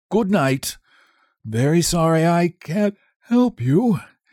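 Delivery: drowsy talk through yawn. A stone statue settling back onto his slab says good night, yawning. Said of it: "yawning behind his marble hand".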